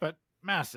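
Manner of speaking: ordinary delivery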